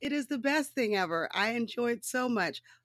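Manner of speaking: words broken by nonstop laughter. Recording an episode, the speaker keeps laughing nonstop. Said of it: "I can't stop laughing".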